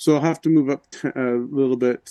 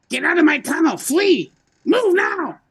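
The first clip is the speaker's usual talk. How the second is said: very high-pitched goblin voice shouting; 4 dB louder than usual. Playing a character in a game, shouting at enemies: yelling in a goblin voice. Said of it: "I'm gonna yell out in Goblin".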